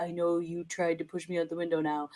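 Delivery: very soft, flat monotone. Predicting the next episode and voicing Bran: Bran's monotone voice. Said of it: "in his monotone voice".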